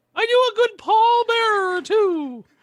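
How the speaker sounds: high squeaky mouse voice. Chatting about wrestlers, a speaker attempts an impression: Mickey Mouse-like voice. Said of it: "That sounds more like Mickey Mouse".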